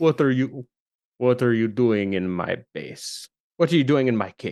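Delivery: very low, very deep, put-on Russian accent. Storyteller voicing a figure confronting the group in his cave: russian accent. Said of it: "why is a Russian accent?".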